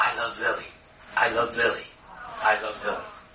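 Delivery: acted whisper with a heartbeat-like rhythm. Narrating a man's reaction at the doctor, retelling a heartbeat-rhythm whisper. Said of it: "he's whispering".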